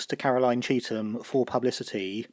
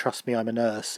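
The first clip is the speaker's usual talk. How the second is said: normal talking voice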